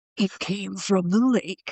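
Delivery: slow eighties slasher movie trailer announcer voice. Talking about an eighties slasher font, doing the eighties slasher movie announcer voice. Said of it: "the movie announcer voice".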